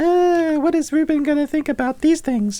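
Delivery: very high, squeaky, mock-eager voice.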